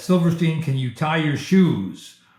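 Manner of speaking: put-on angry voice. Retelling how the scary department chairman questioned them: imitating an angry chairman. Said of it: "looked at me kind of in an angry way".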